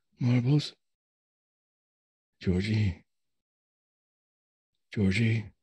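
hushed, whispering voice. Voicing a confused father calling his son's name: whispering. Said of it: "you hear Eugene whispering".

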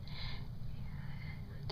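soft, unvoiced, hushed whisper.

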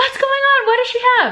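high yell calling from far away, acted out. Speaker recalls calling out from the other side, retelling a yell. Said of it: "I'm just yelling from the other side".

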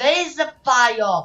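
shrill, very loud, high-pitched alarmed yell. Playing a game as the plane catches fire, calling to the general, shouting. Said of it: "I don't know why I'm shouting that".

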